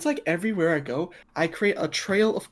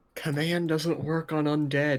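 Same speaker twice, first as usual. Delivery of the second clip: half-whispered stage tone; 3 semitones lower than usual. Telling the party a rule about the undead: hushed tone. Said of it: "In a hushed tone".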